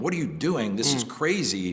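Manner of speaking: ordinary talk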